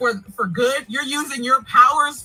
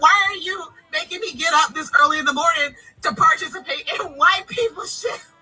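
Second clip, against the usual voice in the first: put-on male yell, higher; 4 semitones higher than usual. Retelling what a man said on a tubing trip: imitating a man yelling. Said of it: "he yelled at me and said".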